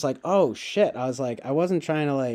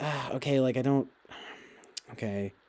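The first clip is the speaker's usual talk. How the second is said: put-on mild frustration, soft, slow, fumbling for words; 8 dB quieter than usual. Retelling own reaction while struggling with an order: imitating own frustrated self. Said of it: "I was just a little bit frustrated".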